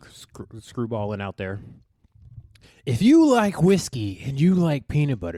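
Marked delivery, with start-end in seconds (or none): 2.9-5.4 loud, put-on commercial announcer voice. Asking to be sponsored again while plugging Screwball, in a sponsor voice. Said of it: "what this sounds like?".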